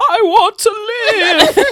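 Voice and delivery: high, very slow, hammy Shakespearean-style declaiming. Describing a movie, the speaker imitates its Frankenstein, who talks like a Shakespearean actor. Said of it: "clearly a Shakespearean actor".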